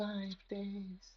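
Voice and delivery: put-on barely audible, hushed horror-film little-girl voice. Reading a story aloud, voicing a line: little girl from The Ring voice. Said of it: "say it in the little girl from the Rings voice".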